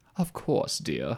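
poor put-on British accent. Asked whether going to court means speaking in a British accent, replying in a bad British accent. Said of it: "I hope that's not your British accent".

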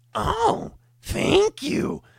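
very high, squeaky, raspy, creaky gremlin voice. Retelling how they changed the way they say a line, in a gremlin voice. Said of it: "Like some gremlin".

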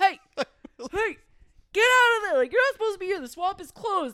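very high, shrill, loud yell. Telling how a man on a fishing boat shouted at them, imitating a man yelling. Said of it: "he's yelling at them like".

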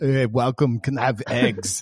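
put-on thick Austrian accent. Quoting Arnold Schwarzenegger's movie sheriff in a thick Austrian accent. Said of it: "this thick Austrian accent".

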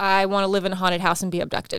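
ordinary talk

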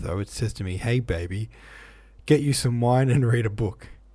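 ordinary delivery

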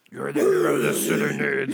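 very loud, booming dark caped hero voice. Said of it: "I'm going to go on for 5 more minutes talking like this".

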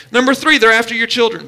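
ordinary talk, nothing marked

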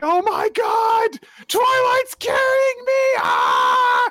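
mock very high, shrill, swooping panicked screaming. Retelling how an injured Fiona reacts to being carried, Fiona's mock screaming. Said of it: "mentally screaming over it".

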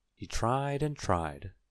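ordinary delivery

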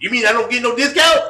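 mock dialect voice, high-pitched and loud.

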